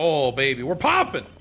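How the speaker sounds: shouting. Reacting while heading through the hallways, yelling. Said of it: "Sorry, don't yell".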